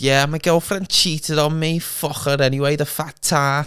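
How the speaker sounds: put-on young Scouse male accent, high and slow. Retelling what a Scouse kid said: imitating a Scouse kid's accent. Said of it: "That's a good accent".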